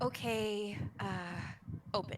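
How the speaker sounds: slightly nervous, hesitant voice. Voicing a character guiding another into her room: nervous character voice. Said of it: "you can kinda hear in her voice, she gets a, a little bit nervous".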